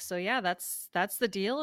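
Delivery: ordinary talk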